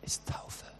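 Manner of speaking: very soft, barely voiced whispered word. Naming one thing that belongs here, saying it very quietly: very quiet. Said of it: "ich sage es ganz leise".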